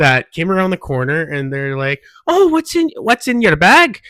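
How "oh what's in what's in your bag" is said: very high, loud put-on Scottish women's accent. Retelling two Scottish women who came around the corner; imitating a Scottish woman's accent. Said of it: "I don't know what kind of accent that was".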